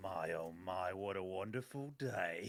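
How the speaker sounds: very low, very quiet under-breath mutter. After the last ant dies, a player's character looks at it, said under the breath. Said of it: "I say under my breath".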